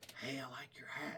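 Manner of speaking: very hushed, secretive whisper. Speaker retelling how people leaned in close to praise the speaker's hat, whispering. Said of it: "why are you whispering it?".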